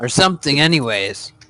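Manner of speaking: plain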